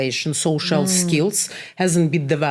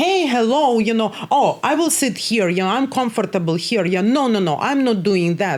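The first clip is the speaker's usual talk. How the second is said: mock confident, at-ease, self-assured voice, pitched up; 6 semitones higher than usual. Recalling how a client sounds after sessions: imitating a client's new confident voice. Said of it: "you're like".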